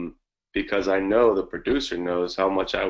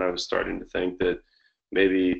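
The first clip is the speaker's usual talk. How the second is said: plain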